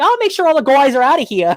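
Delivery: put-on Boston accent, pitched very high and loud. Quoting a possessed nurse from a show, in a boston accent. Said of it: "they take over his like his like Boston accent".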